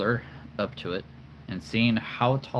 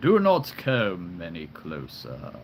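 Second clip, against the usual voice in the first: deep, swooping, commanding, all-powerful king voice; 4 semitones lower than usual. Voicing an all-powerful king character, in a deep king voice. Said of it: "the all-powerful deep, all-powerful king".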